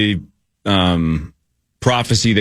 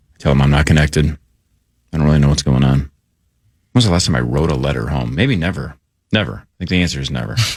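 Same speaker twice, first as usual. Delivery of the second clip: half whisper, much lower; 6 semitones lower than usual. Speaker tells listeners about calls with their dad, half whispering. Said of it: "I'm more like half whispering".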